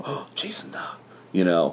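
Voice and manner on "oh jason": imitated murmur, much higher and quieter. Speaker retells how passersby recognize him, imitating them under their breath. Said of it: "kind of under their breath".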